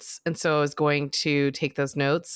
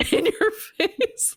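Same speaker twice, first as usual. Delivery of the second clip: cracking up mid-phrase, very high, laughing through words. Repeating the other speaker's playful taunt at the show's end: laughing while talking.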